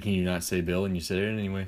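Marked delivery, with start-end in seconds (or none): none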